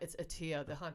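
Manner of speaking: gentle, quiet teasing tone.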